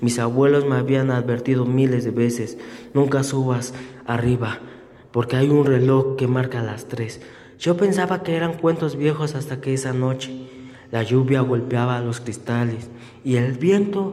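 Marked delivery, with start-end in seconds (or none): none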